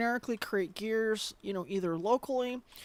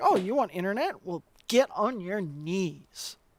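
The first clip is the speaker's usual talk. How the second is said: very authoritative, slow, demanding, "knees" drawn out; 5 dB louder than usual. Retelling a joke played while fixing someone's computer: demanding tone. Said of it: "demanding and very authoritative on it".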